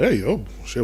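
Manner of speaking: normal talking voice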